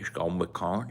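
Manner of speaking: fake flat tone, very quiet. Imagining outtakes with a director coaching Woody, doing a mock low-energy Woody take. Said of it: "that was a little low energy".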